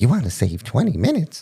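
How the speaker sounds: high, sing-song little lady voice like car navigation. Speaker recalling what the voice in the other's car said, little lady car voice. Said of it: "your little lady voice in your car said".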